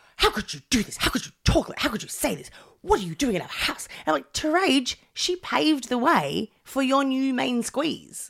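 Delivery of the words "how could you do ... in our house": put-on fast, angry, demanding barrage of speech. Retelling a character's reaction from the episode: imitating angry Terese. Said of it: "Terage would be this angry".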